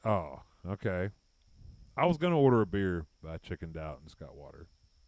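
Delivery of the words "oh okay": acted disappointed tone of voice. Retelling how a server answered an order of water: imitating a disappointed waitress. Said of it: "looked at me all disappointed".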